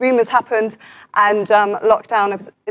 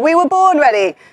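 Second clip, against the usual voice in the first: high-pitched mock shouting; 5 semitones higher, 3 dB louder than usual. Addressing viewers at home, imitating the J247 shouting at the TV. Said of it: "is shouting at the TV".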